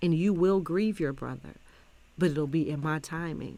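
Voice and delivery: ordinary talk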